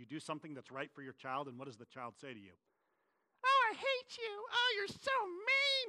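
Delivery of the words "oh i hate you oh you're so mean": put-on very high, slow, drawn-out girlish voice. A parent acts out what a child says back to them, in a put-on girl's voice. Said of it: "I went to a girl's voice there".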